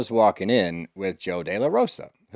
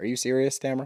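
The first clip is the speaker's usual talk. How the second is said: mock very calm, quieter man's voice; 4 semitones higher, 3 dB quieter than usual. Speaker retells a tense exchange, Matt answering Tamara, imitating him very calmly. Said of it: "very calmly".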